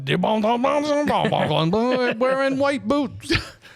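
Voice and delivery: put-on high, garbled, mumbled Cajun accent. Retelling what could be heard of a movie line, imitating Wilford Brimley's garbled bayou accent. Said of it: "good work understanding anything he said".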